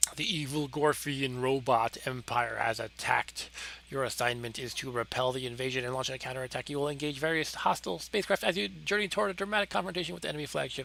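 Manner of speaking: very fast, rushed, rattled-off reading aloud. Reading a shoot 'em up game's intro text aloud, reading very fast. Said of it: "I had to read very fast".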